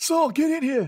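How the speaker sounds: put-on old man voice.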